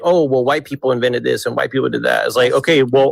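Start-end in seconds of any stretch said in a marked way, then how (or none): 0.0-2.0 put-on pedantic tone. Mocking an imagined critic's objection: imitating a pedantic person. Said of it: "be pedantic and be like".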